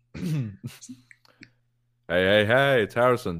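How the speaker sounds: very slow, laid-back, chilled-out hippie drawl. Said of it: "do you have a [name] impression".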